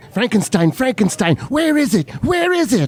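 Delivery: very high calling voice. Comparing two movie characters, doing Fritz's voice. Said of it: "and then of course as Fritz's go".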